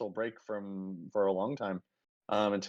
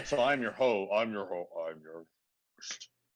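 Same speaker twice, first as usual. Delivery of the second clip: too low-pitched voice. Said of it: "You cut out when you went too low".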